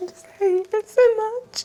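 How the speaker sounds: very high, loud, tearful wailing. Answering someone who asks why they're crying, while crying. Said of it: "Why are you crying?".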